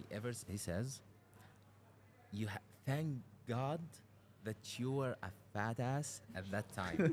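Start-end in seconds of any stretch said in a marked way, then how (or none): 2.3-7.0 put-on strong Egyptian accent. Retelling what the doctor said on coming into the room: strong Egyptian accent. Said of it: "with the most Egyptian accent".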